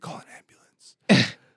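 acted whispering. Retelling how he whispered to the referee from the ring, acting out the whisper. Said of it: "he whispers to the referee".

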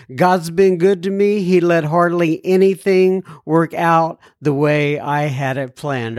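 ordinary talk, nothing marked

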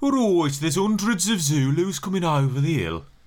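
sleepy, undramatic Birmingham accent, nearly nodding off. Explaining why a film changed the accent, voicing a Brummie: Brummie accent. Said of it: "a Brummie saying".

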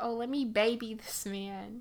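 ordinary delivery

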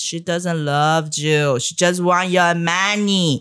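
put-on yelling. Retelling how the stranger yelled at a husband: imitating someone yelling. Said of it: "the crazy person start yelling at my husband".

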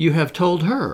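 scornful tone. Narrator reads Lady Mary's retort to Lord Brocklehurst, disdainful. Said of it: "disdaining him".

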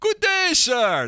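bad fake German accent, very high and loud. Recalling a chat roulette site where a guy from germany pops up: terrible german accent. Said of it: "That's a terrible accent".

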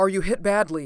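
gasped through chattering teeth. A man stumbles over a fallen doctor during rifle fire, gasped through chattering teeth. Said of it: "he gasped through chattering teeth".

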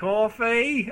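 put-on British-sounding waiter accent. In an improvised restaurant scene, a customer orders from the waiter, british accent. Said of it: "that's British".

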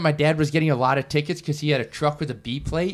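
ordinary talk

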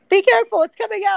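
very high, raspy, shrill, rushed gnome shout. A game narrator voices an unseen gnome calling out, shouting gnome voice. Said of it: "you just hear a gnomish voice just kind of shout out".

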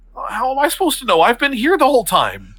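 baffled, confused, very high, swooping tone. Voicing a magician's assistant who snaps out of her stage act: confused stage assistant. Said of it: "So she's also confused".

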